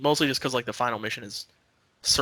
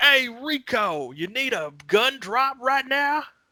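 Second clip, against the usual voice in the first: dopey American voice, very high, slow, drawn-out; 13 semitones higher than usual. Imitating the game's handler: imitating a big dumb american. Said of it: "this big, dumb American".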